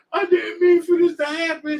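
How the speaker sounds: very high-pitched, tearful sobbing voice. Imitating a woman at a funeral by the casket: imitating sobbing. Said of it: "sobbing all over the casket".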